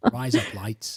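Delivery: Australian accent. Trying out how Australians say razor blades, in an Australian accent. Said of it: "that's how Australians say razor blades".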